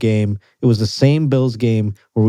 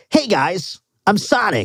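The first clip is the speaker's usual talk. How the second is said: high, sing-song cartoon voice, drawn out and swooping; 9 semitones higher than usual. Joking about voicing a cartoon hedgehog: Sonic voice. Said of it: "If I could just voice Sonic".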